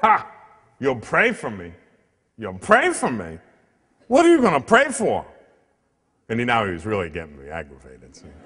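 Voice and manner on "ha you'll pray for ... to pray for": put-on swooping, scoffing, derisive sneer of disbelief. Retelling a man's reaction when he offered to pray for him, imitating him scoffing. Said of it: "he scoffed".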